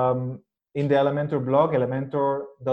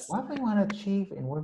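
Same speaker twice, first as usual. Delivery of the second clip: quiet, soft, delicate, pitched-up way of talking; 7 semitones higher, 7 dB quieter than usual. Imitating a man who talks very quietly, imitating his quiet voice. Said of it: "He's so quiet when he talks".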